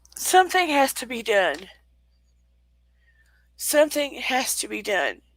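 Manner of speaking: tearful, choked voice. Pleading that change must come while in tears: choked up with tears. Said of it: "I'm feeling choked up".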